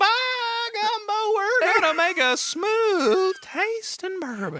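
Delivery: put-on old prospector drawl, very high, very slow, loud. Joking about how the bourbon makers talk: old prospector voice. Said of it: "They're old prospectors".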